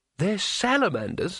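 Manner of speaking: high, disbelieving, can't-believe-it incredulous tone. Narrating Rincewind questioning Two Flower about the lizards, incredulous. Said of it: "asked Rincewind incredulously".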